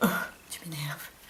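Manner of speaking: low, irritated whisper.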